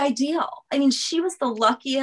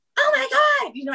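acted-out panicked freaking out, much higher; 14 semitones higher than usual. Speaker retelling noticing a child missing from the car, retelling freaking out. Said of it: "I'm like freaking out".

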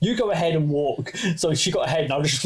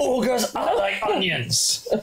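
put-on Scottish accent, pitched up with big sing-song swings; 9 semitones higher than usual. Asked by the hosts to be Scottish, a speaker does a Shrek voice. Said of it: "Be Scottish".

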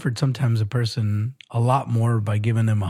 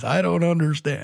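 put-on grumpy old man voice, higher; 6 semitones higher than usual. Repeating his bit for the other speaker, in a grumpy old man voice. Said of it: "That was my old man voice".

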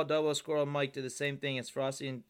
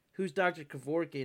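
ordinary delivery

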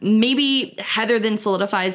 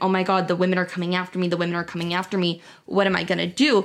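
put-on panicked speech. Acting out how he reacted when the news reached him: imitating panicked speech. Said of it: "He's panicking now".

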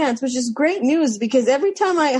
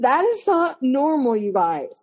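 normal talking voice

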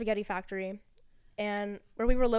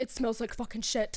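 put-on heavy Scottish accent, complaining tone. Retelling how a man complained, in a thick scottish accent. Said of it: "he had like a really thick Scottish accent".

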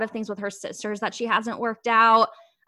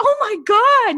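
sudden high, loud scream; 12 semitones higher, 8 dB louder than usual. Retelling reacting to a post announcing a breakup, reenacting a scream. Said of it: "I literally like screamed".

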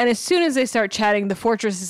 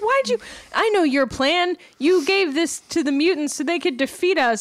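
very upset tone, higher; 6 semitones higher than usual. Retelling a cartoon scene where a character accuses another: imitating someone super upset. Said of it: "super upset".

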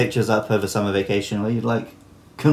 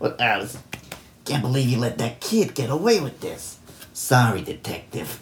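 sleazy put-on New York mobster accent; 4 dB quieter than usual. Recalling a voice from earlier, the speaker does it again: New York gangster voice. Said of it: "my New York gangster voice".

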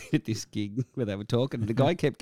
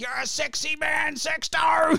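mock yell, much higher, slower. Recounting a gig where a fan yelled out from the crowd, imitating a fan yelling. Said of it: "some bogan in the middle of the gig yells out".

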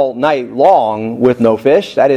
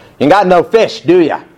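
put-on snarky New York accent, pitched up; 5 semitones higher than usual. Retelling a teasing question from the shore: snarky New Yorker accent. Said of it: "like a New Yorker kind of thing".

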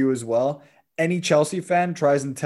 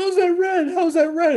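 mock very high, pissed-off, angry complaint; 4 dB louder than usual. Retelling a red card complaint: imitating Son, pissed off. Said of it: "he goes and he's all pissed off. He's like".

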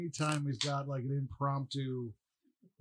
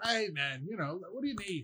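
put-on British accent, pitched up; 5 semitones higher than usual. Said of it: "That's my British".

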